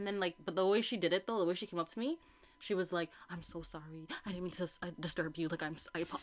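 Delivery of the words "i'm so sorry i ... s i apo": put-on nervous, flustered stammer, lower and quieter. Retelling how a stranger asked for help: imitating someone stuttering nervously. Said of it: "stuttering and, like, all over the place".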